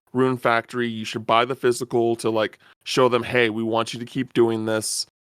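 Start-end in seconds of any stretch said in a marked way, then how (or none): none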